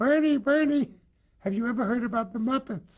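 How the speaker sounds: very high-pitched calling voice. Retelling what a boss said on the phone, in a very high-pitched Harry Calshine voice. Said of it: "He had a very high-pitched voice".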